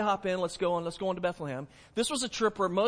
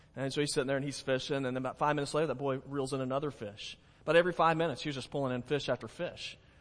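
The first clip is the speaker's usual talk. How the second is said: ordinary talk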